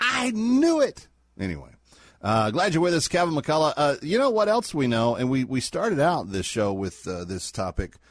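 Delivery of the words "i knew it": put-on yell, much higher pitch, slower pace. Imagining 45 at Mar-a-Lago hearing the document scandal on TV, imitating 45 yelling. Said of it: "yelling at the TV going".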